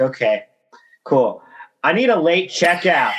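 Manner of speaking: mock loud straight-faced voice. Retelling asking the front desk for a late checkout: imitating own loud deadpan request. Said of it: "I say it with the straightest face, loud voice".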